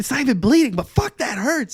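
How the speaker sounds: very loud, shrill, high-pitched yelling. Retelling an injury where both people were yelling: retelling a yell. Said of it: "we're, like, yelling at each other".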